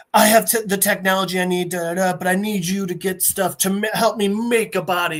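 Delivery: ordinary talk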